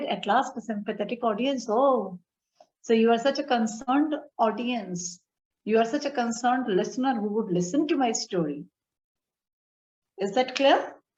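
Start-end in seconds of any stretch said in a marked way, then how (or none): none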